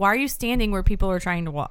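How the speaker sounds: usual speaking voice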